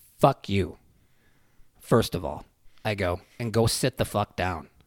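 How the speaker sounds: mock utterly calm, level voice with no heat. Recounting answering a cop who was yelling at kids: retelling a dead-calm reply. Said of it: "just dead calm".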